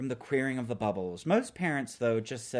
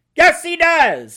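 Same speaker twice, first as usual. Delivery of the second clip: very loud, very high-pitched shouted yell; 18 dB louder than usual. A man replies after the narrator disagrees with him, yelled. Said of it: "His face screwed up and he yelled".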